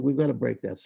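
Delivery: plain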